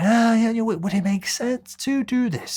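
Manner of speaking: rise-fall tune over would it make sense. Asking for the meeting with assertive tonality: pitch up then back down. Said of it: "we go up and then come back down".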